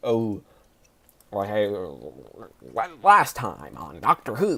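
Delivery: exaggerated, swooping New York accent, announcer style. Describing a show's narrator by imitating him: over-the-top New York accent. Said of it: "does it in this New York accent".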